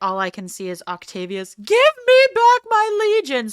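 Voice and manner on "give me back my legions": very high, raised, petulant tantrum voice. Imagining a ruler who lost his legions: Octavius throwing a fit. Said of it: "throwing a little bitch fit in his palace".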